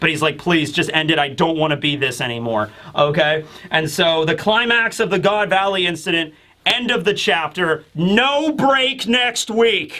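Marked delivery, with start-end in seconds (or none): 0.4-2.7 put-on weeping, pleading tone. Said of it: "he's weeping".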